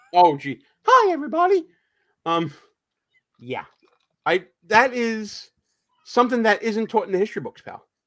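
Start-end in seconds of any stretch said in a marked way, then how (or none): 0.8-1.6 squeaked out, very high pitch. Joking about someone becoming the voice for Mickey Mouse: Mickey Mouse voice. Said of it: "becoming the voice for Mickey Mouse".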